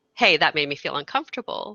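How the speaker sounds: usual speaking voice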